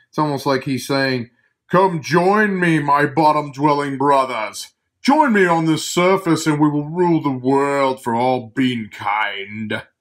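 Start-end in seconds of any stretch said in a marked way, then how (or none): 1.7-9.7 zealous, fanatical, grand rallying voice, kind drawn out. Showing a game box's artwork, voice the pictured figure in a put-on character voice. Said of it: "I don't know why I said it in that voice".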